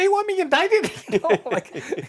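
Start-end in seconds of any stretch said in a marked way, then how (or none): 0.0-0.9 absurd squeak, very high, loud and shrill. Recounting what he said to others about mediator immunity: highest voice you can imagine. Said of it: "with the highest voice you can imagine".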